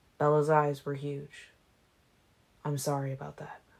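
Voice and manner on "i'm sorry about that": murmured quickly, hurried. Narrating, the speaker turns back to Bella and speaks, murmuring quickly. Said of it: "I murmured quickly".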